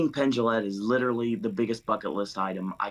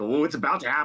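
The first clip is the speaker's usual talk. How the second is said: put-on giddy excitement, higher pitch; 5 semitones higher than usual. Retelling watching a film's opening scene: imitating own giddy excitement. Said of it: "giddy in my seat".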